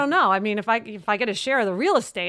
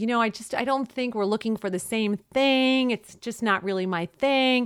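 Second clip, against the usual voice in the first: ordinary delivery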